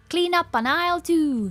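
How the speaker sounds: put-on American accent. Repeating back the other speaker's line to tease them: weird American accent. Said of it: "like a weird American accent for it".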